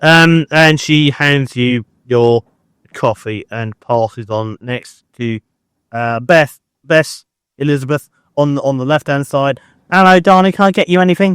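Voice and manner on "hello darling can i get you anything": quick, chatty put-on Essex accent. Voicing a woman serving coffee on a train, in Essex accent. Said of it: "She's from Essex".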